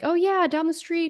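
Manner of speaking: high-pitched, passive-aggressive, dismissive delivery. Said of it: "this passive aggressive".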